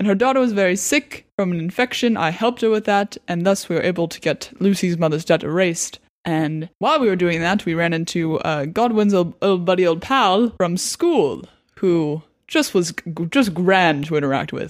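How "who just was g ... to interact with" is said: dripping with sarcasm, said aside. Recapping a run-in with an old pal from school: sarcastic. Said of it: "I sense a lot of sarcasm".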